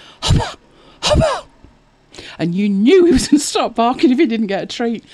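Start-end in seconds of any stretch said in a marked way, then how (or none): 0.2-1.5 very high mouthed dog pre-bark. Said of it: "he'd stand there and go".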